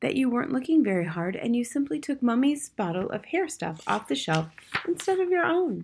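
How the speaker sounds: quiet, low-key, softly spoken delivery. Matilda answers her father's question, speaking quietly. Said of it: "Matilda said quietly".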